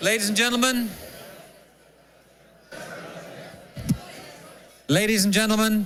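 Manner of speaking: very high, authoritative English announcer yell. Speaker calls the room to attention, yelling for attention. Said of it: "sorry to yell in your ears".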